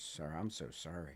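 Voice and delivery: put-on voice on the edge of crying. Retelling the clerk's apology: imitating someone almost in tears. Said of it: "she's almost in tears".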